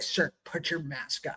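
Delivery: whispered, breathy, aggressive delivery. Retelling how a woman behind the counter yelled across the store: imitating an aggressive yell. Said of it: "aggressive woman behind the counter yelled at me".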